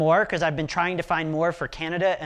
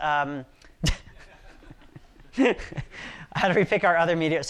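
slow speech, laughing through the words. Speaker repeating an audience question aloud, laughing while talking. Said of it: "I'm laughing about something not related".

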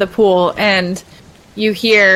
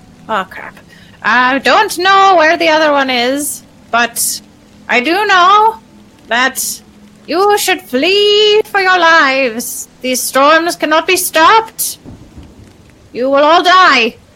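put-on creature voice, high and slow; 8 semitones higher, 4 dB louder than usual. In a role-playing game, an ooze mephit answers the players: ooze mephit voice. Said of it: "This is an ooze mephit".

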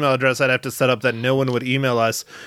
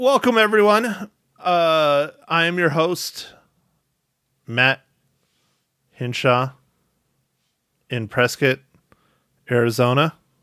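sluggish, too slow delivery; 2 semitones higher than usual. Host welcoming everyone and introducing themselves, delivered too slow. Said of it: "That's too slow".

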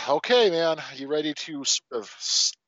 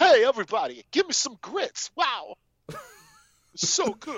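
pitched-up, heavily laid-on bad Southern drawl; 9 semitones higher than usual. Doing a joke impression with a Southern accent: John Travolta impression. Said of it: "a John Travolta impression".

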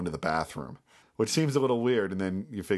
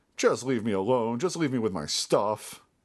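put-on sad, put-upon man's voice; 3 semitones higher than usual. Describing an actor's take on a character, imitating a sad, put-upon guy. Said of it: "put upon by addiction kind of guy".

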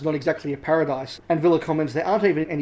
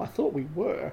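flat, deadpan delivery; 8 dB quieter than usual. Quoting a character's reply from a tv episode, retelling a deadpan reply. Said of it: "avon's deadpan reply".

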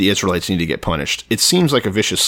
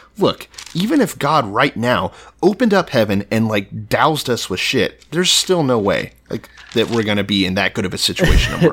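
mock officer voice, incredulous and disbelieving. Retelling the officer's reply to the prophet: imitating incredulous officer. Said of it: "is incredulous".

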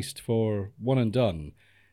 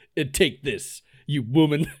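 put-on dismissive tone. Retelling a film character handing over a hanky: imitating a dismissive retort. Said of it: "dismissively hands her a hanky".

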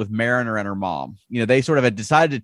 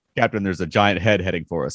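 mock flat, low, unbothered deadpan delivery; 5 semitones lower than usual. Recounting what the con officer deadpanly told the captain, retelling a deadpan line. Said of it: "he just deadpanly said".

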